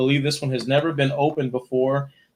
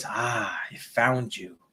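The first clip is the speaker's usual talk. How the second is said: soft, hushed, creepy killer-doll voice; 2 semitones lower, 6 dB quieter than usual. As a little figure who walked through the door and looks up at you, use the Chucky voice. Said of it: "he says in the Chucky voice".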